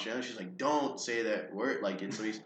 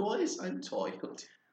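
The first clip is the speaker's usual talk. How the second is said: put-on drunk Australian baby voice, much higher; 9 semitones higher, 5 dB quieter than usual. Joking with others about a weird voice, doing an Australian drunk baby voice. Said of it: "Australian drunk baby".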